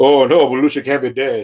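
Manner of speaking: put-on stunned, shocked, grieving disbelief. A host does his imitation of TV-movie Robin Williams reacting to John Belushi's death. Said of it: "This is my imitation of TV movie Robin Williams".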